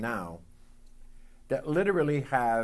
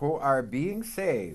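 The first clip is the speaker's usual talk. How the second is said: slow, drawn-out heavy stress on being. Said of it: "I stress the word being".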